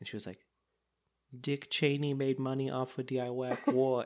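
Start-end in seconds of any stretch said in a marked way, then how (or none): 1.4-4.1 put-on child's whisper, higher. Retelling a three-year-old whispering a line to her grandfather: imitating a child's whisper. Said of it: "I have something to whisper to you".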